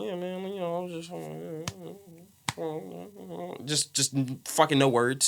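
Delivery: put-on mumble. Discussing a slurred way of talking, one speaker acting it out, imitating mumbling. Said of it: "like mumble".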